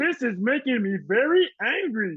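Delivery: high-pitched cartoon Martian villain voice. Showing the only Looney Tune impression he does, he uses Marvin the Martian voice. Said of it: "the only Looney Tune impression that I do".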